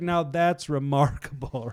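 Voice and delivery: mock-sarcastic remark. Retelling a man's reaction in a Bible story, imitating a sarcastic remark.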